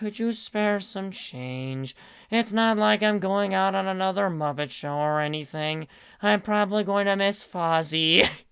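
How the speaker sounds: glum, downcast, sad, defeated puppet voice. Continuing the mixed voice as a street beggar: depressed Kermit voice. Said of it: "sounded like a depressed Kermit out on the street".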